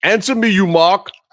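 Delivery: put-on high, affected American accent. Reading a tweet aloud the way it should sound: Miro voice. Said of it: "you have to say that in the Miro voice".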